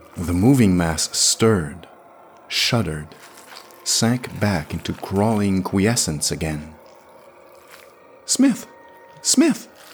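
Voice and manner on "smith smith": very high, quivering, fearful, gentle, insistent voice. Narrator reading the Venusian calling out to Smith, gentle, insistent, quivering with terror. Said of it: "The Venusian's voice was gentle and insistent, and it quivered a little with terror".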